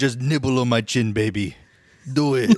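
put-on slight French accent. Retelling what a man said to her, in a slight French accent. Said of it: "Sounds a little French".

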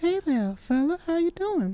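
very high, soft, hushed, creepy voice. Imitating a football referee's call, in Herbert from Family Guy voice. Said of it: "sounded like almost like Herbert the pervert".

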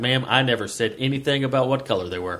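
plain

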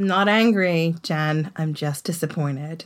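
slow, mock let-down, reproachful tone. Imitating a parent telling a child: mock disappointed tone. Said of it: "It's when they're like".

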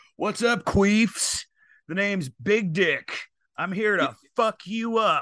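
radio shock jock style voice. Speaker trying out a different opening for the show, shock jock voice. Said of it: "Should I start more like a shock jock?".

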